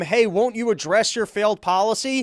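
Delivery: mock taunting, jeering, pointed heckling tone. Retelling a heckle about a failed policy: imitating MTG heckling. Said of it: "handing him the proof of his failed policy and then heckling him".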